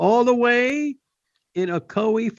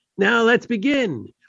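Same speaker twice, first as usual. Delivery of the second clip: usual speaking voice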